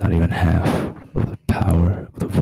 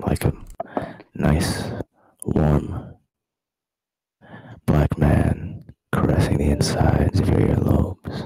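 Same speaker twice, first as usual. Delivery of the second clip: deep, low put-on rasp, slow and drawn out; 2 semitones lower than usual. Joking with others who asked for quiet, put-on low raspy voice. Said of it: "you like the sound of my nice, raspy, low voice".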